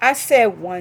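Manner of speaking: loud, exasperated, frustrated yell.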